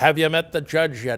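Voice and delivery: very booming voice. An attorney waiting to be sworn in retells a man's question; imitating a booming voice. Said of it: "And he booms, and he had a very booming voice".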